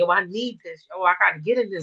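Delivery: mock tearful crying voice. Retelling a phone call about getting into a class, imitating yourself crying while pleading. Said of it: "I just bust out crying".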